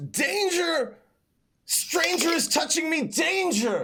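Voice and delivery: very high inner voice of a sentient sword. Voicing a rapier that speaks inside a character's head: sentient weapon's voice. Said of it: "In your head it goes".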